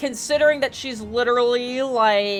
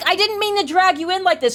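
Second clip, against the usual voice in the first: sarcastic tone, pitched high; 7 semitones higher than usual. Mocking what the character just said: mocking imitation of a character. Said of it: "She's like".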